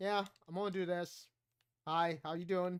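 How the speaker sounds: dull, listless, flat, quiet low-energy voice. Imitating own past streams, imitating own low-energy streaming. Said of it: "nobody wants to watch you go".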